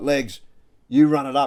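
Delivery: mock loud, drawn-out shout. Retelling a player calling out during a footy game: imitating someone yelling. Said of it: "he's yelling out to me".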